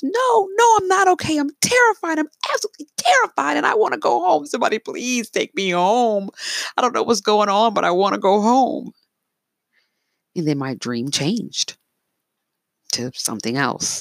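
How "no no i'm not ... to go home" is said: play-acted very high, tearful, trembling, sobbing plea. Retelling own terrified plea to a friend in a dream: retelling a sobbing, trembling plea. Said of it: "trembling and sobbing".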